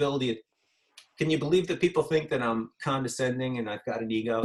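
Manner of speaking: usual speaking voice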